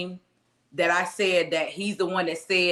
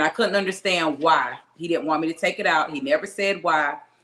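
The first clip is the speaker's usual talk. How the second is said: ordinary talk, nothing marked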